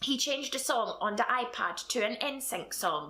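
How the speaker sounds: ordinary delivery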